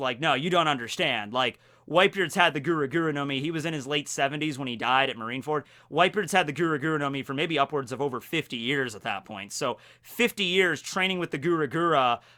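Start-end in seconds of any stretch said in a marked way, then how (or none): none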